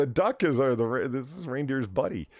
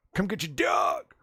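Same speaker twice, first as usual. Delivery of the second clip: put-on yelling, restrained and half-voiced; 5 semitones higher than usual. Acting out a man yelling at his neighbor: imitating someone yelling. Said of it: "yell at his neighbor".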